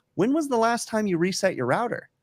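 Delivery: sweet, very high-pitched, polite and courteous voice. Retelling an internet support call, the speaker quotes the agent's question, retelling a polite question. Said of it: "she asked Bill politely".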